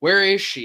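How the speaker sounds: put-on angry, demanding voice. Retelling a scene, quoting a character's question: imitating an angry demand. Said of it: "And he's angry".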